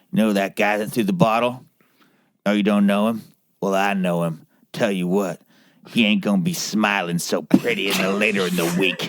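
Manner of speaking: talking with no teeth. Retelling what a local man missing teeth said: imitating a toothless man. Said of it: "And he said this with, like, no teeth himself".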